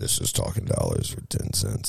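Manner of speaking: professional radio announcer voice, deep and soft. Repeating for the others the radio voice he just used, super deep radio voice. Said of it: "That was my professional radio voice".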